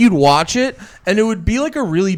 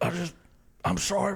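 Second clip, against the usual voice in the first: fake passionate sobbing, quieter; 12 dB quieter than usual. Acting out a man's passionate cry to a partner: mock passionate crying. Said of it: "had a man passionate cry".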